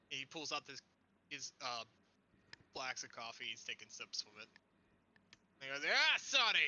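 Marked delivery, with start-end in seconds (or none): 5.9-6.7 put-on boozy, drunk old man voice, pitched up. Voicing a character acting drunk, greeting someone: acting drunk. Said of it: "stumbling and acting like he's drunk".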